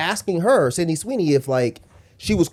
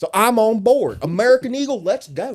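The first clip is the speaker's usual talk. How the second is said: mocking tone, higher pitch; 6 semitones higher than usual. Mocking how right-wingers react to an ad: imitating a MAGA supporter. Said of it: "they're just like".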